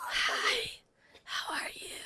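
little, tiny, breathy, mousy whisper. Speaker reenacts how she sounded right after landing: talking like a mouse. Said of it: "Were you talking like a mouse?".

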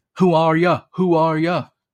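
loud, high-pitched, put-on Cockney accent. Giving an example of what American fans do, mock Cockney accent. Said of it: "talking in a mock Cockney accent".

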